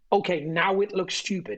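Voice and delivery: plain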